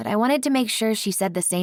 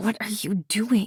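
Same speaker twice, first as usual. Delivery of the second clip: hissed whisper through gritted, clenched teeth; 2 semitones higher than usual. Narrator confronting two people who just walked in, whispered through gritted teeth. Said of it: "I whispered between gritted teeth".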